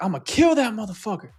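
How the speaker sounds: put-on screaming. Retelling a movie scene where a character threatens a captive: imitating someone screaming. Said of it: "he just starts screaming and hollering at him".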